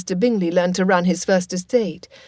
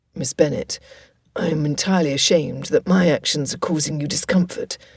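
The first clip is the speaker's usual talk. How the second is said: strained, forced through gritted teeth; 4 semitones lower than usual. Narrator reading a hurt man's words to a lady, whispered through gritted teeth. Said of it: "Mister Darcy whispered through gritted teeth".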